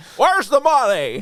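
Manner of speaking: put-on very high-pitched old Hollywood movie-star voice. Doing an impression on request, demanding where the money is: Jimmy Stewart voice. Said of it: "You do such a good Jimmy Stewart".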